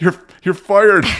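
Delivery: put-on strained, breathless voice. Retelling trying to fire someone while winded: imitating struggling to speak in pain. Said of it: "I couldn't even get it out 'cause my chest hurt so bad".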